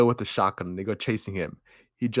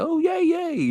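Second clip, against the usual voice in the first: acted, very high-pitched, delighted, gleeful little cheer. Retelling a movie scene where the Leprechaun gets his gold: imitating the Leprechaun getting happy. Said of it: "And he gets all happy".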